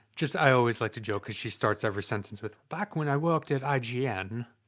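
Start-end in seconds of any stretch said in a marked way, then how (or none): 2.7-4.5 bad, slow attempt at an Australian accent. Joking about how a woman who worked at ign starts sentences, bad australian accent. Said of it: "I can't do an Aussie".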